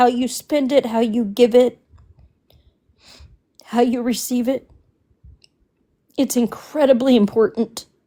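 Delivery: holding back tears, fighting emotion. Saying how hurt they are by what happened, holding back tears. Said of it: "I don't wanna get emotional again".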